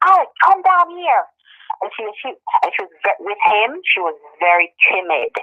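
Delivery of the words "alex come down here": scream, higher pitch. Retelling how the employer called his wife down: imitating a scream. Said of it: "he screamed".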